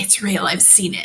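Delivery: whispering in character. Voicing a character answering a question in secret: whispering back in character. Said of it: "I'm gonna whisper back".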